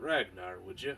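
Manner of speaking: hushed, low, leaning-in tones. A Druiger approaches the table and leans in close, speaking in hushed tones. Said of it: "in hushed tones".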